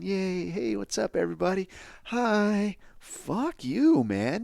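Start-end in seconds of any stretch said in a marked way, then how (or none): 0.0-2.8 slow, high, chirpy sunny cheerfulness laced with sneering. Mocking a woman who greets everyone happily: mocking imitation of cheerful greeting. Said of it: "smiling like it's your time in the sun".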